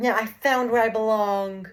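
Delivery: mock overjoyed gleeful tone. Retelling a movie ending, quoting Supergirl: imitating happy Supergirl. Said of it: "She was so happy".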